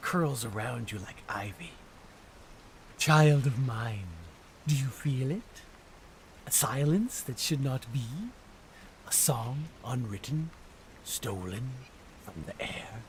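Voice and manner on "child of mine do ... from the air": gentle, playful, teasing voice with a cruel edge. Narrating a dream, voicing the voice that speaks to the dreamer: soft, playful, cruel voice. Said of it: "A soft voice, playful and cruel".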